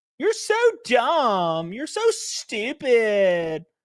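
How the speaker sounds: put-on high, swooping scream in Valley Girl accent. Retelling Destiny's reply to Ben Shapiro: Destiny in screaming Valley Girl accent. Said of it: "screaming like you're in, in this weird Valley Girl accent".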